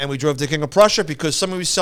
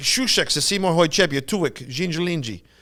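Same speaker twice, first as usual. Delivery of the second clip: put-on babbling in a weird Russian accent. Recalling old Star Trek dialogue, imitating Chekov's weird Russian accent. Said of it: "Chekhov with that weird Russian accent".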